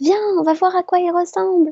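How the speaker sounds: high-pitched little bunny voice. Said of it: "Et elle dit".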